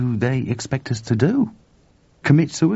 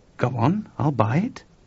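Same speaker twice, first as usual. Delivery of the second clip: usual speaking voice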